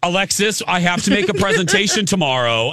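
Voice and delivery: very high, booming, swooping, loud self-important businessman voice. Retelling overheard loud talkers in an airport lounge: imitating a loud businessman. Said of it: "they're talking very loud".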